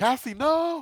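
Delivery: very high, loud gasp of alarm. Voicing a character who sees a friend step through a door: gasping cry of alarm.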